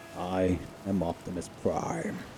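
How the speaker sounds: very soft, deep voice, delivered slowly. Trying the Optimus Prime voice, soft but deep: Optimus Prime voice. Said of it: "That's what makes Optimus Prime's voice so hard to do".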